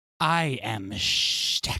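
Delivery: lizard-folk creature character voice. A player, asked who he'll be playing today, answers in Shtek voice. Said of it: "I won't be talking about that voice the whole time".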